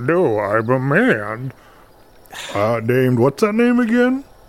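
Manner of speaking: put-on male voice. The lady of the lake pretends to be the man others are seeking, put-on man voice. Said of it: "She's doing a voice".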